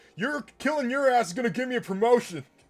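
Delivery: muffled yell as if through a helmet. Voicing an officer on fire charging with his baton: muffled yell through a helmet. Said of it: "yell, th-, like, muffled through his helmet".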